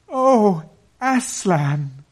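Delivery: frightened yet glad cry, very high and loud. Narrator reads two children looking up at Aslan at sunrise, crying out frightened and glad. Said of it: "cried both the children, staring up at him, almost as much frightened as they were glad".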